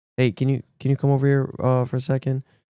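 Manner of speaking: quiet, soft speech. Retelling how someone approached mid-workout: imitating someone speaking quietly.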